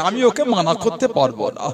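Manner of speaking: ordinary talk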